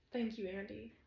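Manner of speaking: plain reading voice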